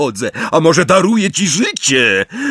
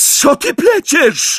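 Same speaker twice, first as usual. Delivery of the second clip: very high cry with fear breaking in; 12 semitones higher than usual. A woman answers the boy, shouting in fear. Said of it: "Krzyknęła i po raz pierwszy w jej głosie zabrzmiał strach".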